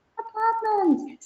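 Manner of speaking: put-on babyish voice, very high-pitched. Showing how students can repeat a keyword: saying it like a baby. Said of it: "Say it like a baby".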